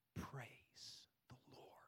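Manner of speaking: hushed, very soft whisper under the breath. Retelling what was said alone in the bathroom at night: whispering. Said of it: "Here's what I whispered".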